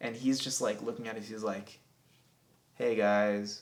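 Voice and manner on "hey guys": robotic, halting delivery, louder. Retelling meeting Elon Musk in a hangar, doing an Elon Musk impression. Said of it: "you know how he talks on Rogan".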